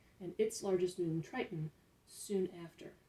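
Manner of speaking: ordinary delivery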